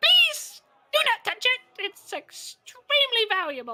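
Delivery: very high, very loud sing-song gnome voice. Voicing a gnome shopkeeper who stops a player from poking a beholder: gnome shopkeeper voice. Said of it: "the gnome goes".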